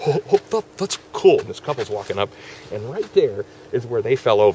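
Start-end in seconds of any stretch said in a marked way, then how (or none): 0.1-1.4 put-on high, giggly, loud speech through laughter. Retelling falling over laughing on a walk, acting out laughing while talking. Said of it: "So I fell over laughing".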